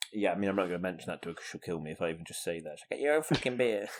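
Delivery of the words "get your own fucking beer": voice done nasally. Imitating Shauna's reaction to a beer request: imitating Shauna. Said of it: "And that is how she sounds".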